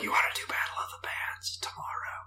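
very quiet, breathy whisper. Retelling asking someone a question while a brother sleeps nearby, retelling a whisper. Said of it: "I had to like whisper it".

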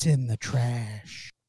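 very somber, grave tone, slow delivery. Retelling a daughter's answer about where it went: imitating a somber tone. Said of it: "very somber sounding is how she said that".

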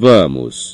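muttered grudgingly, reluctant tone. A boy backing off from a fight in front of a teacher: muttered grudgingly. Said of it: "Murmurou Draco contrariado".

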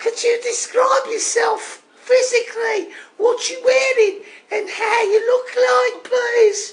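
put-on Brummie Birmingham accent. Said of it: "it's me accent".

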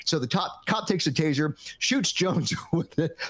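words broken up by laughter. Telling a story to a listener, laughing while telling. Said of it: "I'm laughing".

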